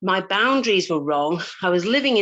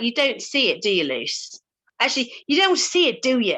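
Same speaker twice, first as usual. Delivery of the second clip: rough put-on Irish accent, best attempt; 4 semitones higher than usual. Retelling what a coach said: put-on Irish accent. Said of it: "'Cause she's Irish, and that's obviously how she talks".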